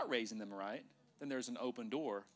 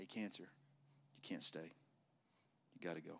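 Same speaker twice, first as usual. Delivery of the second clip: understated, soft, slow, unhurried delivery; 6 semitones lower, 6 dB quieter than usual. Showing how to command cancer to leave: talking quietly. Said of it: "you can talk quiet like this".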